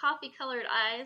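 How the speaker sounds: plain reading voice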